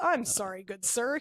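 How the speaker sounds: mock stilted, forced delivery. Retelling how a character in the film apologized: imitating a forced apology. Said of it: "It was a very forced".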